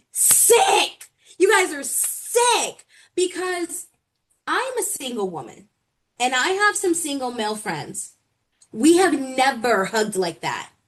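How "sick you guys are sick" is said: acted-out, high, drawn-out screamed outburst. Retelling what was yelled at the tv over a hug: imitating her own scream. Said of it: "I literally screamed at my T V".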